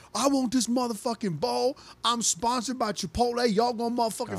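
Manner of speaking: mock high-pitched shrieking, entitled screaming rant. Retelling a TikToker ahead in line starting to scream, imitating screaming. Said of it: "He he starts screaming".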